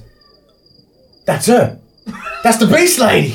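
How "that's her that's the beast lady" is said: loud, high accusing voice. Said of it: "and goes".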